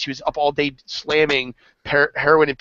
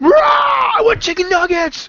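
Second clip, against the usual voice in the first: put-on very high, drawn-out, crazed yelling fit; 5 dB louder than usual. Retelling a woman going crazy at McDonald's; imitating her freaking out. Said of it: "She was like freaking".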